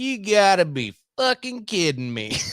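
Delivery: put-on full rural country accent, laid on heavy. Telling a story, the speaker imitates a man's reaction, imitating a country accent. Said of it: "He sounded more country than anybody".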